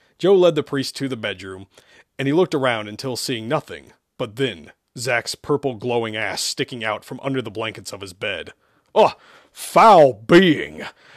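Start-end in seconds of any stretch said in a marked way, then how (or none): 9.0-10.9 booming, very loud, swooping growl. Narrator reads the priest's line on finding the thing under the bed, growling. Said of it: "Father Sherman growled".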